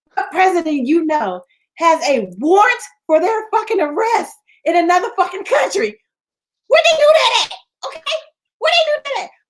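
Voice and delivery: very high shouting, rising and swinging wildly. Speaker ranting to another person in conversation, yelling. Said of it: "I think I'm yelling".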